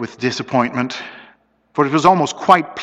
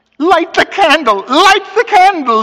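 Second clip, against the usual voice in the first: very high, loud, breaking, cracking voice; 7 dB louder than usual. In the dark, a man urges his companion who cannot find the matches, voice breaking. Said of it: "his voice broke as a boy's does sometimes".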